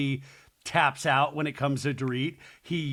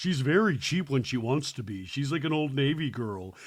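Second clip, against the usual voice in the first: ordinary delivery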